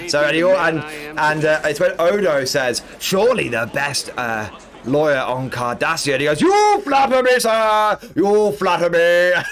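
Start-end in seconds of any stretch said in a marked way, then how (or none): 6.4-9.3 overdone, theatrical, hammy put-on character voice. Quoting a character's reply in a scene, over-exaggerated put-on voice. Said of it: "he always does it in this over-exaggerated voice".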